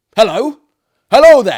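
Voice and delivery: gruff shout, very high and very loud. You hear a shriek of agony in the night; reply in a gruff voice. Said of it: "said a gruff voice in reply".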